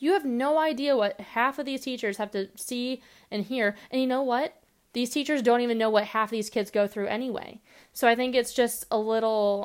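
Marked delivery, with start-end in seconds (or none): none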